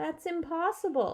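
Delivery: high, worried, anxious, concerned voice. Reading a story aloud, the mom answers Anastasia in a worried voice. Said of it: "he heard his mom say in a worried voice".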